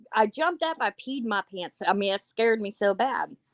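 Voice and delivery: ordinary delivery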